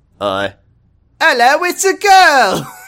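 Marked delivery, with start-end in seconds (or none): 1.2-2.7 put-on very high, loud British accent, "girl" drawn out. Reading a story aloud, voicing the doctor announcing the birth: british accent. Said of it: "is that a British voice because this is the, the doctor".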